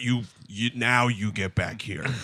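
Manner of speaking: deep, low, hushed fatherly voice, pitched way down. Speaker recalls how their father would order them back, imitating dad's much lower voice. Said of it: "My dad's voice would lower like eight octaves".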